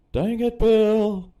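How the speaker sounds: very loud, high, frantic panicked shouting. Podcast co-host, urged to get it out of his system, does a panicked Hank Hill impression. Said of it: "I do a really good Hank Hill panicking impression".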